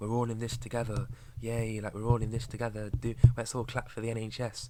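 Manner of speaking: derisive, scornful, mock dim-witted parroting voice. Mocking people who keep cheering while losing everything: mocking imitation of idiots. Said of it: "these idiots would still be like".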